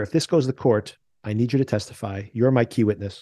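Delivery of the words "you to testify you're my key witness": ordinary talk, nothing marked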